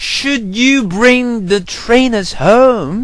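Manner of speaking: high, loud, slow scream.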